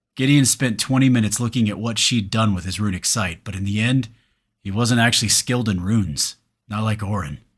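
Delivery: plain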